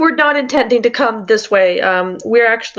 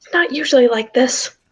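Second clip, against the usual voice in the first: confiding, voiced stage half-whisper; 4 semitones higher than usual. Voicing Clem holding a player's hand in a game: half-whispering. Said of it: "kinda whispers".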